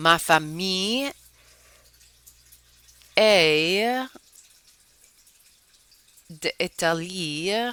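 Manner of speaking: slowly spoken, at an unhurried pace. In a French lesson, speaker says an example sentence, speaking slowly. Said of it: "I'm speaking slow".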